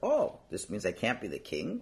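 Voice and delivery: surprised, not accusing, with rising intonation.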